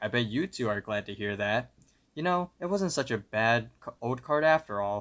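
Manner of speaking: usual speaking voice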